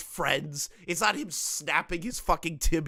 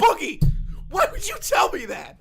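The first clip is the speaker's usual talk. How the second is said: loud, high-pitched, straight-up screaming; 5 dB louder than usual. Acting out grabbing the other speaker by the collar: acting out yelling. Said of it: "Just be yelling".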